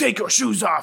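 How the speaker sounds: put-on heavy German accent, commanding tone. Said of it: "She put on, like, a German accent".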